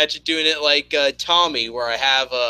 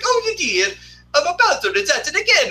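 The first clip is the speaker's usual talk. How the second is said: put-on Italian accent, pitched very high; 13 semitones higher than usual. Retelling a cartoon scene, doing the character's lines: Mario Italian accent. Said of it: "I do, like, the Italian accent".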